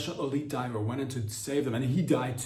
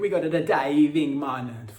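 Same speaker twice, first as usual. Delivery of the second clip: put-on Jamaican accent, slow and loud; 6 dB louder than usual. Speaker imagines five Italians going diving, slipping into a Jamaican accent. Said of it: "I don't know why it's sounding more Jamaican".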